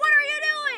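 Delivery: mock very high shrieking, screaming yell. Speaker recounting being found in a locker, retelling own yell. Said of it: "I yelled".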